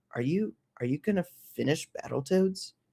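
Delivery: mock-serious, grave, earnest, heartfelt tone. Retelling a friend's question during a game session: imitating a friend, mock serious tone. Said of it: "it got really serious".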